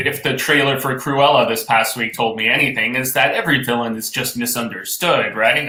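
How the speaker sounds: plain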